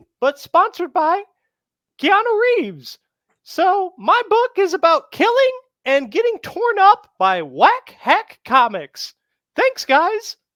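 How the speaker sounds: high, loud, squeaky sing-song voice. Speaker improvising a bit in a Mickey Mouse impression. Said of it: "nail that Mickey Mouse impression".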